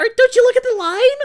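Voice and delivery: put-on very high, very loud childlike kid voice. Retelling own words from age twelve, in a high-pitched twelve-year-old voice. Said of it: "So I have like a high pitched voice".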